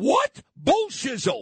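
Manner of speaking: really loud, swooping outburst. Retelling speaking up in a silent ballroom: retelling a loud outburst. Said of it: "Like, really loud".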